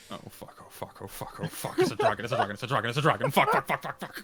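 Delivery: mock panicked inner-voice muttering. Retelling how a character silently panics while tapping his foot: imitating panicked inner voice. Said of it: "He's like".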